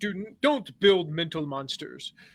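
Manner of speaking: drawn-out, slow, bad English accent. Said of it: "This is terrible English voice".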